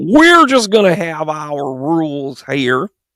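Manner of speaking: awful fake Texan accent, drawn out. Arguing that states see things differently, speaker voices Texas in an awful Texan accent. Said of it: "That's my awful Texan accent".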